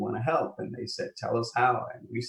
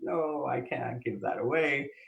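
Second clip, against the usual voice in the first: put-on heartbroken child's voice in a tantrum; 3 semitones higher than usual. Retelling a story, voicing the young kid's reply, imitating a child's tantrum. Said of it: "He throws a tantrum".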